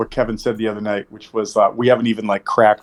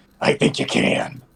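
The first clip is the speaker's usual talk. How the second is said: breathy whisper in an imitated, borrowed-sounding voice; 4 dB quieter than usual. Voicing a Kenku character answering whether he can be trusted: Kenku mimicry voice. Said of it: "his Kenku mimicry goes".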